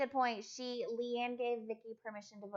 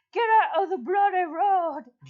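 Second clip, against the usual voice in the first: very loud, high, put-on Scottish accent gone wrong; 8 semitones higher, 16 dB louder than usual. Quoting someone's comment during a vote, in a failed Scottish accent. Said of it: "was not a Scottish accent".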